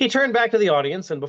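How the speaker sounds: plain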